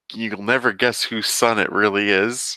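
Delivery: thick, heavy, dripping sarcastic teasing tone. Summarizing a movie's plot twist to another speaker: very sarcastic. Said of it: "I say that very sarcastically".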